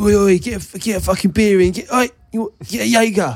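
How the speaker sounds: put-on brash gym teacher voice. Picturing which teachers are brash, imitating the PE teacher: brash PE teacher impression. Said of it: "the brash ones, like".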